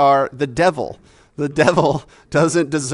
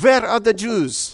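put-on pitched-up German accent; 6 semitones higher than usual. Posing a moral dilemma, the speaker plays the Gestapo knocking at the door, German accent. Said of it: "That's my German accent".

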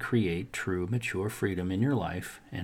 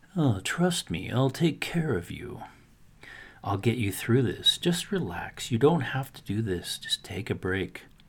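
acted oily, slimy, smooth and soothing voice; 2 semitones higher than usual. Speaker voices the procrastinator talking like a slumlord: smooth, slimy slumlord voice. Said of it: "His voice is smooth, even slimy".

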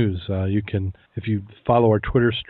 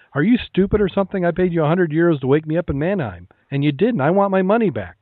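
mock furious yelling, higher; 8 semitones higher than usual. Telling a joke, voicing an angry passenger: acting out an angry yell. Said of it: "started yelling at him".

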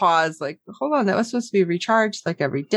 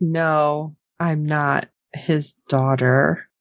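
very slow, forced through gritted teeth, jaw shut; 5 semitones lower than usual. Retelling a scene from the episode, imitating Courtney through clenched teeth. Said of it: "It's like through clenched teeth".

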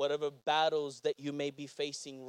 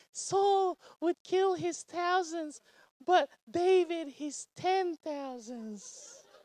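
put-on girl voice, much higher, slower. Retelling what the women said about Saul and David, in a girl voice. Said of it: "That's my girl voice".

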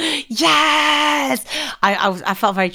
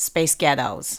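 put-on American accent, American-style pronunciation; 10 semitones lower, 4 dB quieter than usual. Asked to say the two words again, in an American accent. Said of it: "can you say space ghettos in an American accent".

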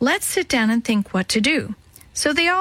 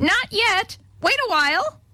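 shrill, very high, drawn-out screech; 10 semitones higher than usual. A parrot opens its mouth in answer to a call: shrieked.

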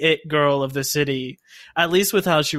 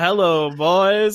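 mock old-time showbiz voice; 3 semitones higher than usual. Discussing the performances in a movie, demonstrate Gerwig's old showbiz accent and lilt. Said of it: "she was doing this sort of accent and lilt".

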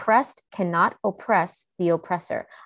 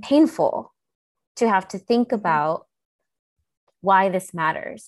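fighting back tears. Speaker explaining why the issue matters, holding back tears. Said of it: "I'm like trying not to cry".

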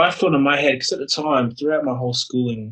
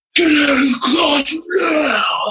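put-on very high, very slow, drawn-out scream; 4 dB louder than usual. Retelling how an angry man screamed at him; retelling a scream. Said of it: "Screams it at me".

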